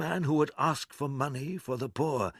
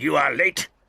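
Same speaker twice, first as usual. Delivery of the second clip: loud, angry, rebuking tone; 6 dB louder than usual. Reading a story aloud, the narrator voices Scrooge speaking to Bob Cratchit, in an angry voice. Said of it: "in an angry voice".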